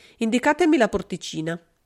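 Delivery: ordinary delivery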